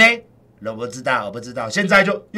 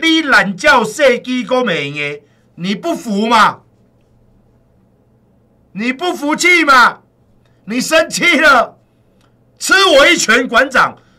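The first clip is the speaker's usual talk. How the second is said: play-acted sudden, brash, loud, high-pitched taunting yell; 6 semitones higher, 3 dB louder than usual. Imagining suddenly calling out to someone in a crowd, suddenly very loud. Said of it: "我忽然很大声的说".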